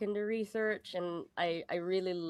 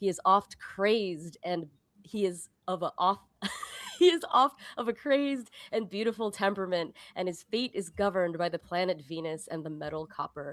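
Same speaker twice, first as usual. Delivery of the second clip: grand, dramatic, theatrical storybook reading; 4 dB louder than usual. Reading a codex paragraph aloud after being asked: dramatic reading. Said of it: "give us your best dramatic reading".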